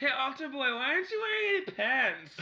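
put-on drunk girl impression. Imitating a movie character he has a crush on: imitating a drunk gum-chewing girl. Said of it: "That's how she talks".

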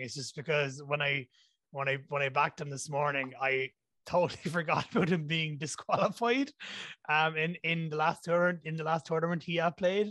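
giggly, amused voice, talking through laughter. Explaining a forgotten disqualification of a pick, laughing while talking. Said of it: "I'm laughing".

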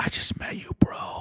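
hushed, quiet, breathy, close whisper. Retelling how a teammate leaned over during a concussion test: imitating a teammate whispering. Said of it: "Jasper leans over and whispers".

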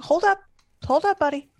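high, yelled call-out from a distance. Calling out in character to a figure hurrying closer: yelling out. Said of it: "I'm just gonna yell out".

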